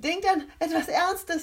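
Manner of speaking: very high, loud, laughing hard through tears. [name], laughing along with the others, tells the group: laughing to tears. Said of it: "lachte [name] und Tränen liefen ihr über die Wangen".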